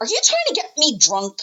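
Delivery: put-on high-pitched, childlike, kid-like voice. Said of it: "Sorry, I shouldn't really use that".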